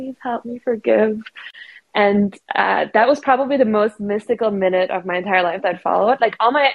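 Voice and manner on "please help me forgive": whisper, higher. Retelling a plea made during an ayahuasca experience: imitating own past whisper. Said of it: "And I whispered out".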